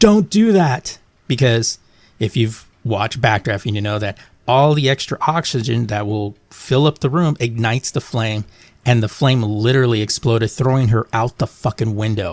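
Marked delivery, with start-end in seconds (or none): 0.0-1.0 put-on screamed outburst, very high pitch. Retelling reacting to a film scene: retelling own scream.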